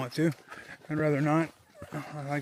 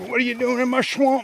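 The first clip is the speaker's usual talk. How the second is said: clumsy, terrible ogre accent, pitched up high; 9 semitones higher, 8 dB louder than usual. Looking for a campsite in a swamp, doing a bad Shrek accent. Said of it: "That was a terrible accent".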